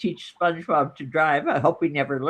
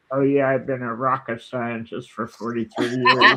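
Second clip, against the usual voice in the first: amazing low, golden-voiced delivery; 5 semitones lower than usual. Retelling what a Jeopardy contestant says: imitating an amazing voice. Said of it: "someone with an amazing voice".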